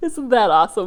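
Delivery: laughing. Right after doing an imitation for her audience, laughing. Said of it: "(Tasha laughs)".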